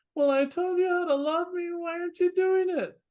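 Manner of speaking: mock, very high, plaintive whine. In a talk about love becoming duty, speaker acts out a mock-whiny voice. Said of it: "you get to the whiny voice that says".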